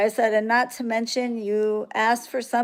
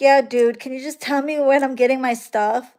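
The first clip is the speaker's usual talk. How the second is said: acted, demanding, rude, full of attitude; 2 semitones higher, 3 dB louder than usual. Retelling a customer's rude message: imitating a customer with an attitude. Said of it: "with an attitude".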